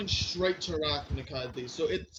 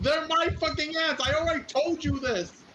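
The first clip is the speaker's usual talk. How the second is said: very high, full-throated, furious-sounding yelling; 11 semitones higher, 5 dB louder than usual. Arguing with a player about the ants: yelling. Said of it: "Why are we yelling?".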